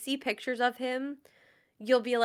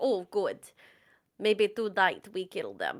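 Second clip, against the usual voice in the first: pet voice with a put-on Russian accent; 5 semitones lower, 3 dB quieter than usual. Explaining how they voice their pets in videos, the speaker does Elton's Russian-accent voice. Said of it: "Elton somehow always has like a Russian accent".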